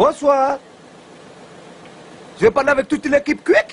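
put-on speech with Comorian accent. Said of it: "imite magnifiquement bien l'accent comorien".

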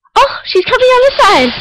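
high, loud excited squeal.

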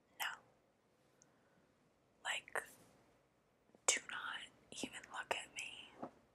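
very hushed, jealous whisper. ASMR roleplay as a jealous girlfriend, in a jealous girlfriend whisper. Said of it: "ASMR Jealous Girlfriend".

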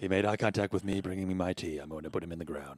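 fake breathy whisper voice. Answering a request to do an Alec Baldwin: whispered Alec Baldwin impression. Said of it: "I just kinda whisper like this".

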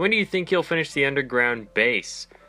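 ordinary talk

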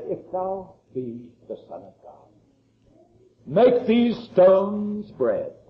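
slow, oily, repulsive voice, oozed out slowly. Preacher retells Satan tempting the fasting Son of God, Satan's oily, repulsive voice. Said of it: "in his oily and utterly repulsive voice".

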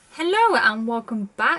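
loud, aggressive, forceful, punchy delivery. Opening a video by greeting viewers: aggressive greeting. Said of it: "I say that so aggressively".

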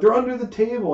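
mock yelling. Recounting a hunt for wipes while she calls out where they are: retelling a yell. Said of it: "she's yelling out".

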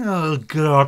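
exasperated delivery. Signing off, you realize there is still someone left to talk about, exasperated. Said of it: "(exasperated face rubbing)".

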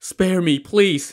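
high, trembling, shaking, begging plea. Narrator reads a stable hand with a sword at his throat, trembling plea. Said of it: "the stable hand pleaded as he trembled".

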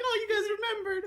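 very high, shy, bashful little voice. Voicing an on-screen character who is getting bashful: imitating a bashful character. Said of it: "he's like".

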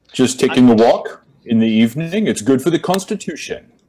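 affected, insufferable put-on New England accent. Tabletop player answers a guard's challenge in character, insufferable New England accent.

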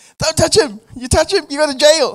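woman screaming, very high, shrill and very loud. Retelling walking up to a driver while a woman screamed a warning; imitating a woman screaming. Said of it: "she was screaming".

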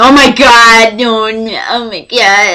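very slow, drawn-out fangirl freak-out. Retelling waiting for someone to return: imitating own past freaking out. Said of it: "and freaking out and fangirling".

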